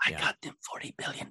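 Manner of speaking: eerie, soft, breathy whisper close to the mic. Imitating a man who whispers into the mic, imitating a creepy whisper. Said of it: "You know how he whispers into the mic? He's like".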